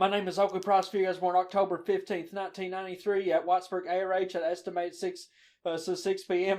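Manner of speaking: rushed, blurted-out string of words all at once. Retelling giving a cop name and birth details: retelling blurting it out fast. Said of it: "I just blurt out".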